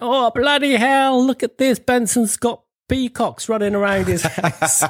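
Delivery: mock shrill, very high, carrying yell. Retelling a lad at the back of a minibus seeing pheasants: imitating Stephen Pardo shouting. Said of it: "was shouting out".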